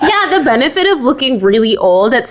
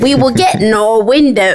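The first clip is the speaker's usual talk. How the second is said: clumsy, fumbling, fake Australian accent; 4 semitones lower than usual. Reading a story aloud to viewers, voicing a line in a bad Australian accent. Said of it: "I can't do an Australian accent".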